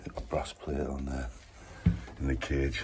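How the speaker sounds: speaking softly and quietly. Leaving the hotel early in the morning and showing a lift: talking quietly. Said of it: "I'm talking really quiet 'cause it's early".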